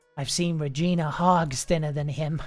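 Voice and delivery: misjudged attempt at a soft, quiet voice. A game master voices a gentleman turning to the player, trying to sound soft. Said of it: "he says in what he thinks is a soft voice".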